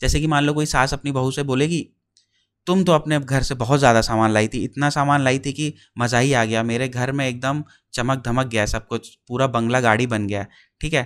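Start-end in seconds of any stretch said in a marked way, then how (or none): none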